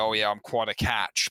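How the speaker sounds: put-on gravelly whiskey voice. Quoting the actor's line to Daphne: gravelly John Mahoney voice. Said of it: "he says it with such gravel and gorse".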